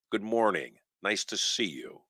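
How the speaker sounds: calm, easy, soft voice. Retelling greeting an angry, yelling man, acting out a calm greeting. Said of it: "in a calm voice, just like that".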